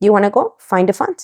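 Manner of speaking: ordinary talk, nothing marked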